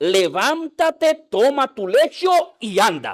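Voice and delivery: firm, slow, commanding and authoritative tone. Retelling a healing scene, voicing Jesus's command: acting out a command with authority. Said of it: "le dice con autoridad".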